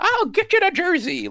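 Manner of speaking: put-on very high crackly old-man voice. Quoting a character's line from the show: imitating crackly old man voice. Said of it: "delivery of the old man crackly voice".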